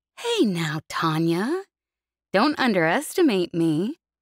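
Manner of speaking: slow drawl with words pulled long. Reading a story, a character answers a warning teasingly: drawling. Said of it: "Jez drawled".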